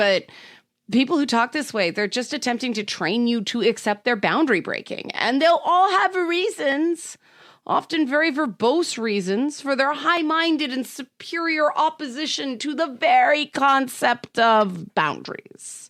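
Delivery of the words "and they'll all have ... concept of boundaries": heavy, mocking sarcasm, slow and pitched-up. Talking about people who break boundaries, the speaker is sarcastic. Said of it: "Note the sarcasm in my voice".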